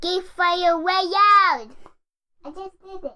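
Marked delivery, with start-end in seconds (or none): 0.0-1.7 loud shout, higher. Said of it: "real loud".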